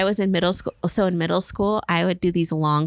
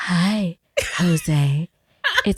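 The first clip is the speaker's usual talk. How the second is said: alluring, come-hither, sultry, seductive put-on voice. Showing the voice she sometimes uses, in a sultry voice. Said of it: "sometimes I use my sultry voice".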